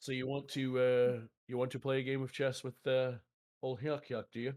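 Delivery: worst-attempt, bad put-on British accent. Urged by friends to try his worst accent: bad British accent. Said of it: "My British accent is the worst of the three or four I try to do".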